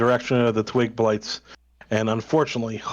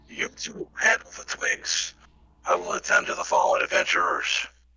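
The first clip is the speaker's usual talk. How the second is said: put-on breathy, elderly man's character voice; 6 semitones higher, 4 dB quieter than usual. Narrating a game, the speaker voices a character calling to the party: old man voice. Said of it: "An old man".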